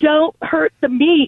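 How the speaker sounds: mock loud, high-pitched hollering. Retelling a mom coming out and yelling: imitating mom yelling. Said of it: "my mom coming out and yelling".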